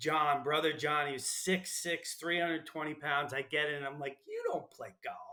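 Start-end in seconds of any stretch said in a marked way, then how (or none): 4.3-5.2 put-on natural New York accent, pitched up. Speaker retells getting into a car beside a big man named John: New York way. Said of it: "in my New York way".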